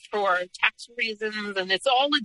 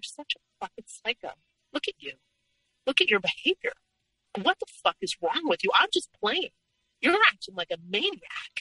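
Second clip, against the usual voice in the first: cool, calm, even, unbothered delivery; 3 semitones higher than usual. Speaker quotes what he said when she screamed at him, imitating someone speaking calmly. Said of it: "And he would say so calmly".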